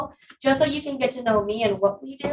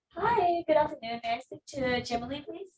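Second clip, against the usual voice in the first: pleasant, polite, soft and friendly phone voice; 4 semitones higher, 7 dB quieter than usual. Role-playing a business phone call, asking for someone, in a friendly voice. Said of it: "so use a friendly voice".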